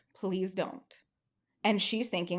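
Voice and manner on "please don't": put-on desperate begging, quieter. Retelling begging her mom not to call the police: retelling a desperate plea. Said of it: "I am begging her harder than I have ever begged".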